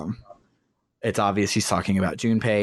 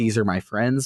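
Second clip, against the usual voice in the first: normal talking voice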